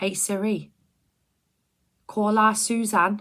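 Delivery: very loud, high-pitched Liverpool Scouse accent. Speaking to siri so it will call suzanne: scouse accent. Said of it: "I have to do the Scouse accent".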